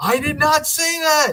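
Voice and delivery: play-acted very high-pitched screaming outburst. Retelling an attorney screaming in court, imitating someone screaming. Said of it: "he starts screaming, like, yelling".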